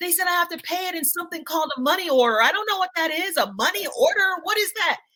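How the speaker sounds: acted total panic, high and completely at a loss. A mother retells her son calling her about a fee, imitating his total panic. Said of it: "The child was in a total, total panic".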